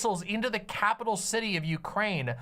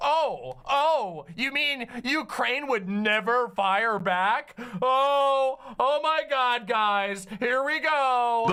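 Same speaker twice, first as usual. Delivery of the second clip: scoffing, smug sarcasm, very slow drawl, long drawn oh; 3 semitones higher, 5 dB louder than usual. Mocking a news host who scoffs at the news: imitating Anna's smug sarcasm. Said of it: "responding smugly and sarcastically to everything".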